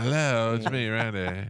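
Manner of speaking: very slow, lazy, sexy, sultry hot drawl. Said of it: "just brushed her hair, shook it out".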